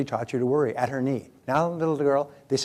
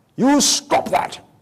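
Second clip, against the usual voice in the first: put-on scolding in a British accent; 11 semitones higher, 7 dB louder than usual. Recalling the father's words to the speaker as a child, father's british accent. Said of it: "with his British accent".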